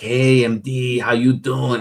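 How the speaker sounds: slow, dragged, drawn-out vampire voice. Retelling how Dippin greeted him: imitating Dippin sounding like Nosferatu. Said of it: "you sound like Nosferatu from Dracula".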